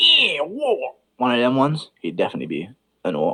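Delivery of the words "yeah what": high, put-on English Cockney accent. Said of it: "if he had an English Cockney accent".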